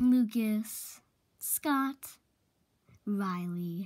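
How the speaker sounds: menacing, sinister, threatening tone. Showing up unexpectedly, a girl greets three friends by name, menacing. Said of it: "Why'd you sound so menacing saying our names?".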